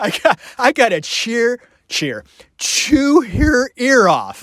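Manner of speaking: giggly talk through laughter. Imagining a family barbecue scene, laughing while talking. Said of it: "I can't talk 'cause I'm laughing".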